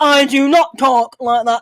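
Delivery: exaggerated fake broad northern English accent. Mimicking a woman who insists she doesn't talk that way, exaggerated northern English accent. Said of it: "trying to be really northern".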